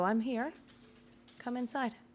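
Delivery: high, off-cadence mimicked speech. Narrator voices the thing calling you from the chapel, off-cadence mimicked speech. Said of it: "the cadence is off, almost like something uh, mimicking uh, speech".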